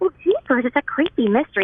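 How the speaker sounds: put-on high cartoon girl voice. Describing how she gets into character for a role: Daphne voice. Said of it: "sometimes if I'm playing Daphne, I'll go".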